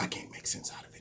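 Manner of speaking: hushed, unvoiced whisper.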